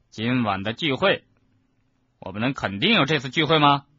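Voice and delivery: plain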